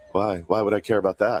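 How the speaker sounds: baffled, dismissive tone, as if it makes no sense. Retelling how Nick Castellanos answers a bad question: imitating Nick Castellanos. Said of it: "and he goes".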